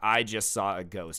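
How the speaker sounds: plain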